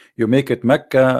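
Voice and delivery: ordinary delivery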